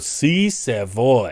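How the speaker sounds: deliberate, slow, condescending talk. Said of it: "He's kinda talking slow".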